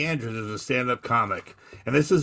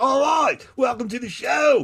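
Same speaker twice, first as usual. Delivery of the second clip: very high, put-on English accent; 13 semitones higher, 4 dB louder than usual. Retelling what the cruise director said at the show: imitating an english accent. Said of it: "this English guy with an ascot".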